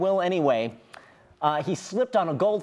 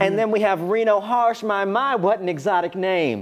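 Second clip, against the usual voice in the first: put-on speaking in Southern accent; 3 semitones higher, 4 dB louder than usual. Asked for a Southern voice, the host introduces the others on the show: put-on Southern accent.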